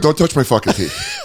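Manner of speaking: put-on tough-guy menace. Acting out a patient warning a dentist off: mock intimidating tone. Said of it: "That would be the most intimidating".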